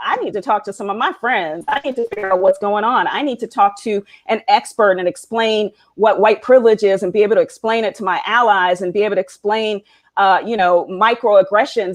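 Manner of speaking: ordinary talk, nothing marked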